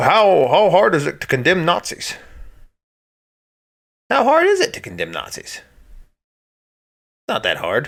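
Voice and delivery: swooping, animated cadence, pitch rising and falling widely. Show how Barack Obama would get up there and talk, in a Barack Obama impression. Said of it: "That's my Barack Obama impression".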